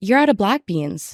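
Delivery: put-on irritated, accusing, pissed-off tone. Retelling a customer's complaint about the beans: imitating a pissed customer's exact tone. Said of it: "in this exact tone, she goes".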